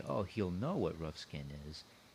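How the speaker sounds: ordinary delivery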